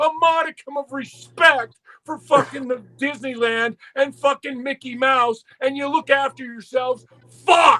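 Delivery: put-on high, boiling-over, fully unhinged furious rant. Speaker acts out a man going off at two workers, retelling someone going nuts. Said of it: "And fucking Ole went nuts".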